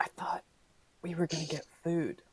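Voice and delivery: soft, hushed whisper. Voicing Mia, who leans over to Venus: whispering. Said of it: "whispers to Venus".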